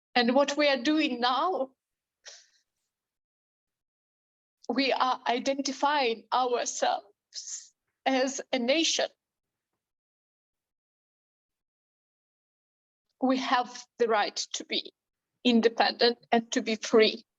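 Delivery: tearful, crying speech through tears. A speaker addresses an audience while holding back tears: crying, tearful voice. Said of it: "Sorry for these tears".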